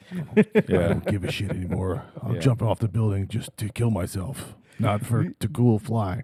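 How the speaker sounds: crude, foul-mouthed, cursing comic-book hero voice. Retelling walking around the house acting out a crude vigilante: R-rated Batman voice. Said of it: "being an R-rated Batman".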